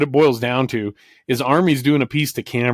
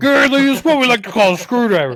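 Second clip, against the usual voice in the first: very high-pitched, poorly done put-on voice; 12 semitones higher, 4 dB louder than usual. Retelling a TV broadcast in a bad Army Armstrong impression. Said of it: "my shitty Army Armstrong impression".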